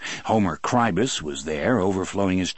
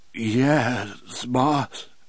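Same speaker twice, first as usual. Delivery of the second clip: trembling, shaking, quavering voice; 4 semitones higher than usual. A man answers his boss, in a trembling voice. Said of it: "his voice was trembling worse now".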